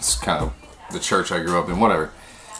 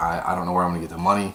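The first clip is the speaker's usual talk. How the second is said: mock, really worried, anxious voice. Retelling what a woman said while you both sat in her apartment, imitating her really worried. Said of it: "She's really really worried about it".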